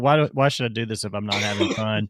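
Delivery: put-on defeated voice. Retelling how Joe Burrow sounded: imitating Joe Burrow sounding defeated. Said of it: "he did sound kinda like a defeated guy".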